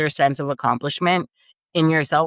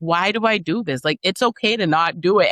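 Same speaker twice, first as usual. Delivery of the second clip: put-on sobbing, higher; 3 semitones higher than usual. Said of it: "Sitting there sobbing, weeping".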